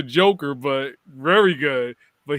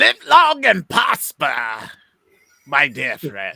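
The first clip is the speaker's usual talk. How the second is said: swooping up and down cartoon villain voice. Before a story wraps up, the speaker delivers a line in the Joker voice. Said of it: "I wanted to say in the Joker voice".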